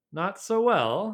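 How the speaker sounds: careful, cautious delivery. Sim answers a question about the narrator's day with Denna, careful. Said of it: "he said carefully".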